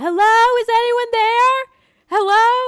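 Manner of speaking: very high, very loud, drawn-out yelling. Retelling calling out a car window at a drive-thru: imitating own past yelling. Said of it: "I start, like, yelling".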